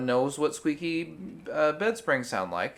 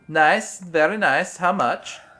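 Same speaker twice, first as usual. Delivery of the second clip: booming character voice, slow and drawn out; 3 semitones higher, 9 dB louder than usual. Answering a joke about a name sounding like Borat: Borat voice. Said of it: "It sounds like Borat".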